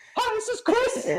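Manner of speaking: squeaky, super high-pitched voice. Recalling a Walmart worker they met, the speaker imitates Chris's high voice. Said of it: "He had this super high pitched voice".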